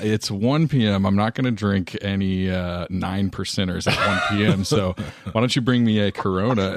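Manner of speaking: ordinary talk, nothing marked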